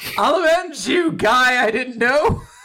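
mock shrill shout pitched very high. Recapping a fight, acting out a character's line as a shout. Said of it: "And Mash shouts out".

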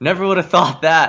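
put-on heavy, broad Cajun accent. Retelling a remark by the guy behind him, in a thick Cajun accent. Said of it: "like a thick Cajun accent".

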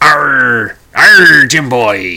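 loud, bellowing pirate voice with big arrr. Speaker shows how people talk like a pirate, in a Robert Newton pirate voice. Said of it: "If you're talking like a pirate".

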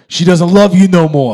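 loud yell in a character voice. Reading a plot summary aloud, as Lotso yells at Big Baby: Lotso impersonation, yelling. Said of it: "That was a great impersonation".

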